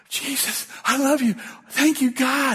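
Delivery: exuberant, overjoyed, high, excited gushing outpouring. Recalling the morning after, the speaker acts out their past self: retelling excited exuberance. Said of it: "I was so excited".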